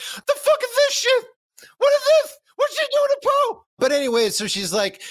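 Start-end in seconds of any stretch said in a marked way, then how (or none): 0.0-3.6 very high-pitched, outraged, raging stuffed-animal voice. Imagining how a stuffed bear in the other room would react, furious Gwenny Bear voice. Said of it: "Gwenny Bear especially would be furious".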